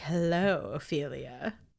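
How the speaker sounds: polished, smooth, suave character voice. Retelling how a character greets Ophelia, suave character voice. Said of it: "more suave, and he's like".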